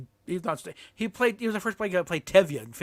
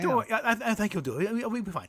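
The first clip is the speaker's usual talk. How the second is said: put-on meek, timid voice, higher; 5 semitones higher, 4 dB quieter than usual. Retelling a man backing away after being yelled at: imitating a meek reply. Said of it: "backs up meekly".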